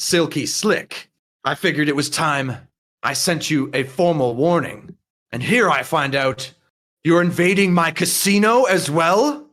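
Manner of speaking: somewhat angry, edged tone. A character addresses silky slick, somewhat angry. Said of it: "he sort of seems angry".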